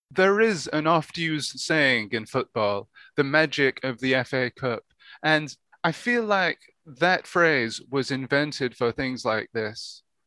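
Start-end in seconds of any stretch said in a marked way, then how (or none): none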